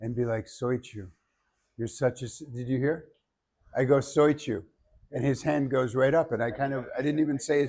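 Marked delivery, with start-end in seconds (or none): 0.5-2.3 low, calm, steady, soft-spoken, diaphragm-supported voice. Demonstrating how to call someone's name without shouting, low, calm voice. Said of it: "I can still have this low, calm voice".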